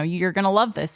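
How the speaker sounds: ordinary delivery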